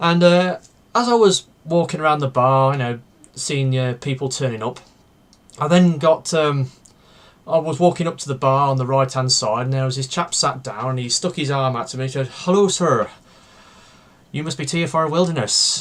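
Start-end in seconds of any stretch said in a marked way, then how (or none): 12.3-15.8 put-on speaking with Irish accent. Retelling how a man at a bar greeted him, with an Irish accent. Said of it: "with an Irish accent".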